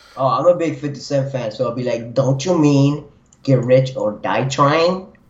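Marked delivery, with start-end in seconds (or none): 2.2-5.0 small, dorky, nerdy, pedantic voice. A [name] fan correcting a misquoted album title, in a little nerdy voice. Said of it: "with, like, a little nerdy voice".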